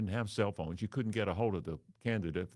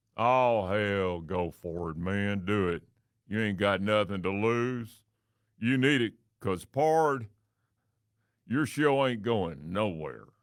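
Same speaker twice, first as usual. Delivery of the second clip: put-on loud, uninhibited, out-of-control drunk voice; 6 dB louder than usual. A speaker acts out a voice on its fourth beer urging him on, loud drunk voice. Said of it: "A voice on its fourth beer, loud, out of control".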